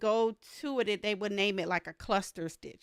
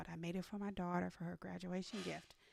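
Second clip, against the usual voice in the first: hushed whisper, quieter; 2 semitones lower, 12 dB quieter than usual. Telling viewers about a secret gift for her daughter, whispering. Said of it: "so I'm trying to whisper".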